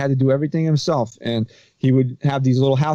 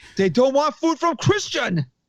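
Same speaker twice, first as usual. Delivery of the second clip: put-on Egyptian accent, higher pitch; 13 semitones higher than usual. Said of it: "Pretty good Egyptian accent".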